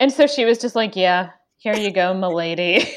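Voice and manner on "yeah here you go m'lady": play-acted sullen waitress voice held throughout. Retelling a waitress who stayed sullen in character, imitating a sullen waitress. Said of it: "like sullen in character".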